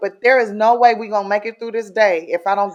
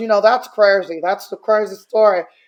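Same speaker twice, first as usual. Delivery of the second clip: normal talking voice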